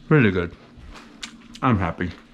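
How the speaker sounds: speech muffled by a mouthful of food. After taking a bite of the finished breakfast sandwich, talking with food in mouth. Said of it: "I shouldn't be talking with food in my mouth".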